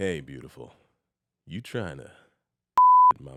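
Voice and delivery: very deep, low, swooping, pleasant-sounding voice. Speaker takes a turn doing the honors on a recording; pleasant voice. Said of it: "It sounded so pleasant though".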